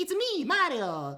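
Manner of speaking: very high, very loud, energetic belted voice. Retelling meeting a voice actor with lots of energy: Mario voice. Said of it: "He had so much energy".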